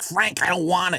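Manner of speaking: mock very high, shrill, shrieking scream. Retelling a woman at the airport yelling at Frank: imitating a woman screaming. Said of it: "she kept screaming".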